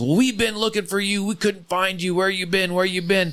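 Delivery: laughing through the words, very high voice. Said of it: "she just laughed and goes".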